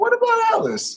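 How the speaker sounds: very high-pitched, all-knowing tone. Retelling how a disliked character asked about someone: imitating Iris. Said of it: "just the way she said it, she's like".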